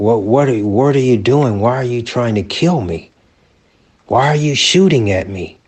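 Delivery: put-on pleading tone. Retelling pleading with an armed man who was shooting: retelling his own past pleading. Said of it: "I'm pleading with him more".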